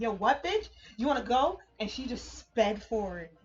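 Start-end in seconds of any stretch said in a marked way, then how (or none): 0.0-1.6 screamed delivery. Retelling screaming back at a driver who yelled from her window: imitating own screaming. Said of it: "I was screaming at her".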